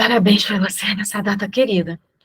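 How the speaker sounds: panting, short of breath. Demonstrating how a pregnant woman should answer, the speaker says the sample phrase out of breath. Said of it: "Estou ofegante".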